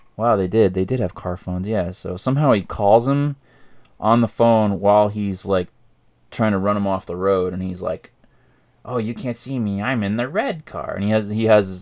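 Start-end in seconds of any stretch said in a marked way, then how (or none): 8.9-11.0 teasing, mocking, taunting voice. Retelling a killer taunting someone over the phone: imitating a taunting killer. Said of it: "taunts him".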